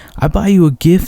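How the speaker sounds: put-on heavily accented, thick foreign accent in English. Recalling a fun man's off-topic sayings during a lesson, imitating a thick accent. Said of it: "he had this thick accent".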